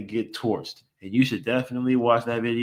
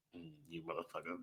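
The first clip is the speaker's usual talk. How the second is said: mock angry mutter, lower and quieter; 6 semitones lower, 24 dB quieter than usual. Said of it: "He's just like".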